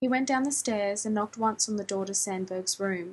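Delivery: ordinary delivery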